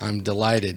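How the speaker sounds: flat, expressionless deadpan delivery. In the game, a character answers Merce's thanks to Doctor Carmichael; deadpan. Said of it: "she says it that deadpan".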